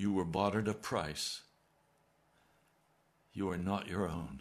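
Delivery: warm, kindly voice. Retelling the Lord's reply to his angry outburst, retelling a kind answer. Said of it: "He answered very kindly".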